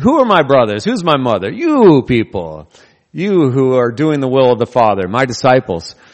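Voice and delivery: mock impolite, rude delivery. In a sermon, retelling a man's reply when his family arrived, acting out a rude retort. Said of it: "So when Jesus says so rudely".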